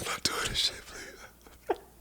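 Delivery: acted crying, breathy, tearful whisper. Retelling the first time on a high trust fall: imitating own crying plea. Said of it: "The first time I was crying like hell".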